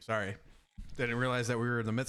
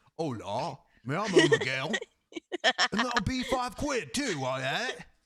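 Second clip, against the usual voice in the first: put-on British gangster accent, higher; 7 semitones higher, 5 dB louder than usual. Mocking the other speaker's accent attempt by repeating it, in a British gangster accent. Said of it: "You sound like a British gangbanger".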